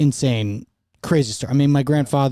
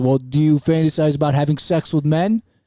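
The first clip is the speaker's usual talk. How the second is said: put-on Brooklyn accent. Recounting a talk with dad, quoting him in a put-on Brooklyn accent. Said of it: "but like a Brooklyn".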